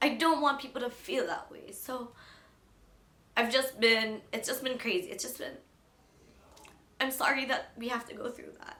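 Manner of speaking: tearful voice, crying through words. Speaker talks about the people in their group, crying while talking. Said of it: "I'm crying".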